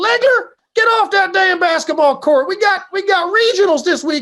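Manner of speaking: put-on very high-pitched, loud yell in southern accent. Retelling how his baseball coach used to yell at him, imitating his southern accent. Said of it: "he had a southern accent".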